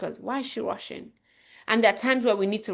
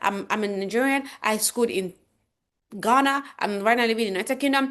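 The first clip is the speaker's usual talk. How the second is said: very fast, rushed, rattled off with no pauses; 2 semitones higher than usual. The speaker demonstrates how people rush through introducing themselves, speaking very fast. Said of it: "they're just like going very fast".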